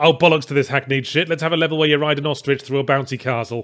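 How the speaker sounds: usual speaking voice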